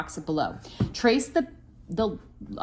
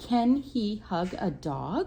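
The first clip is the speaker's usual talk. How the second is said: rising pitch on dog; 3 semitones higher, 3 dB quieter than usual. Showing how to ask a question with the voice: rising tone on dog. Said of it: "I'm bringing my voice up at the end".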